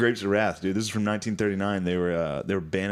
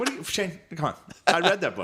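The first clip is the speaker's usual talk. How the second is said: squeaked very high, swooping and sing-song; 10 semitones higher than usual. Retelling a dad insisting he read the book: imitating his dad. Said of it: "He's like".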